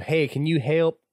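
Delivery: put-on high country boy accent, roughly done. Repeating, as a joke between friends, how a man changed his tune, doing his best country boy accent. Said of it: "In his best country boy accent".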